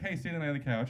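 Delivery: plain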